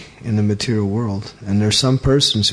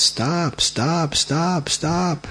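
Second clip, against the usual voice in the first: acted, very slow, stretched-out, pitched-up yelling; 6 semitones higher, 4 dB quieter than usual. Retelling how a lady came out and yelled at them, retelling a lady yelling. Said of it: "she started yelling at us".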